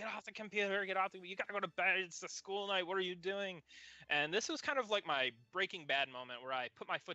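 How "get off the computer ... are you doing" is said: yelling in a higher-pitched voice. Retelling how the mother yelled about the computer: imitating mom yelling. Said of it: "yelling at me".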